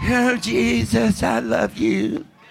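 small, soft, little effeminate voice. Mocking men who lead worship, the speaker imitates someone with a little effeminate voice. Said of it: "Somebody with some little effeminate voice".

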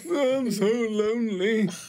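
sobbing, loud crying voice, very high. A character asked why it is crying answers, acted crying. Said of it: "Why are you like crying?".

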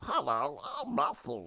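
tiny, soft, squeaky mouse voice. Teasing a fellow speaker about a voice filter, imitating Matthew as a mouse. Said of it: "you sound like a mouse that's like".

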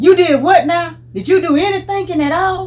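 high, loud scolding voice. Retelling what Granddad would say instead of spanking, imitating his raised voice. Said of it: "raise his voice and say".

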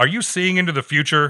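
loud, high, stern nun voice.

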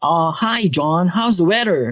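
put-on fake American accent. Filipino speaker retelling how they always talked to others, in a fake accent. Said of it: "I would always put up a fake accent".

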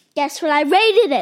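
screaming at very high volume. Asking someone to guess the rating given, screaming. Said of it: "Why are you screaming at me?".

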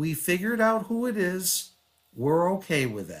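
very calm, gentle, unbothered and pleasant voice. Retelling what a wife said at lunch: imitating a very calm, nice voice. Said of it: "very, very calm, very nice".

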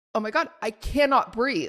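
ordinary talk

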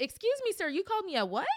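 play-acted, escalating confrontational tone, very high and swooping. Explaining what happens if someone calls them a name in front of them, acting out a raised voice. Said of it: "it's going up".

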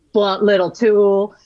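put-on Southern drawl. Quoting a character who fakes an accent to mock her: imitating a mocking fake Southern accent. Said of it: "he kind of fakes a Southern accent to, like, mock her".

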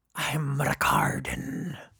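put-on pirate voice. Introducing himself in a raspy pirate voice. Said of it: "this raspy voice is good for my pirate affect".

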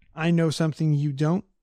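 ordinary delivery

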